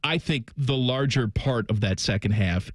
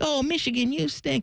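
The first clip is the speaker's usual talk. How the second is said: put-on very high, tiny little kid voice; 13 semitones higher than usual. Retelling a daughter's reaction watching the game: imitating a child's little voice. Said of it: "I just hear this little voice".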